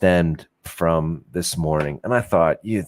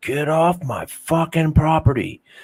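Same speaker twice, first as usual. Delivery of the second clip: mock very high, full-on, all-out shouting; 10 semitones higher than usual. Retelling how a man yelled over an appointment dispute, imitating a man yelling. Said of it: "He proceeds to yell at me".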